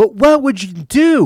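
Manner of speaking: high, loud, drawn-out screaming. Speaker retells a girl arguing with his cousin, imitating her screaming. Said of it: "she's just screaming at my cousin saying".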